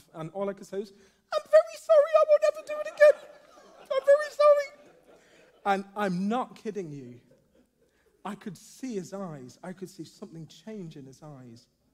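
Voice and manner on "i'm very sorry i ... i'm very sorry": voice shot way up, very loud and shrill. Retelling own apology to a guard, in a very high-pitched voice. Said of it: "My voice went up 3 octaves".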